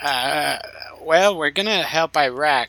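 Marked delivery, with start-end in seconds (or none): 1.0-2.7 put-on slow, pitched-up old man voice, eased back slightly. Showing how to build a voice from an old man: Donald Rumsfeld voice. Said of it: "and then you're Donald Rumsfeld".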